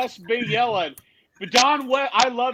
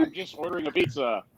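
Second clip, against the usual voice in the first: usual speaking voice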